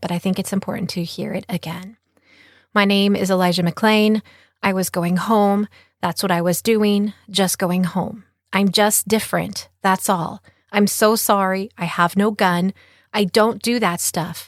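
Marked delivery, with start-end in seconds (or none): none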